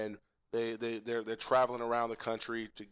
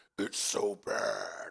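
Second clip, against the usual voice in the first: slow, evil demonic voice. Describing a remixed movie soundbite, quoting the line in a demonic voice. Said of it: "he gets the demonic voice".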